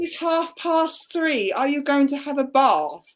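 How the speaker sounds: strong Londoner accent. Showing how the speaker says words, in a really strong London accent. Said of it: "really strong Londony accent".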